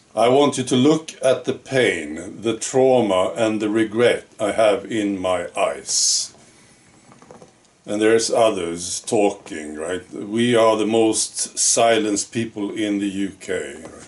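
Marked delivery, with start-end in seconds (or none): none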